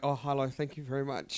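put-on shy quiet voice. Describing pretending to be shy when getting in a cab: pretend-shy quiet voice. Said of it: "What is that voice?".

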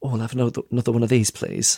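overly timid, meek, small voice. Retelling asking a man for another drink: retelling a timid request. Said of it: "I said it in too timid a voice".

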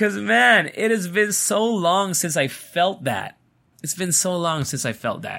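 tearful, emotional voice. Talking about getting work inquiries again after a long time, tearing up. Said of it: "I'm tearing up a little bit".

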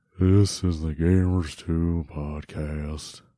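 deep, low, glum, depressing, dragged-out delivery. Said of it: "I can also do an Eeyore introduction".

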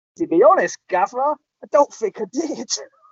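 put-on Danish accent. Retell Poul Hübertz answering the gaffer's question about giving his best, with a put-on Danish accent. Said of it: "your Danish accent there".

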